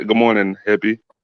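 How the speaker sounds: forced, very low, put-on deep voice. Greeting the others by copying the hosts' greeting: imitating the hosts' deep voice. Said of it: "he tried to put on his deep voice".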